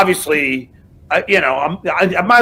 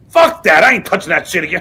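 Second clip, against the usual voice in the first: put-on Pennsylvania accent; 2 semitones higher than usual. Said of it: "He goes".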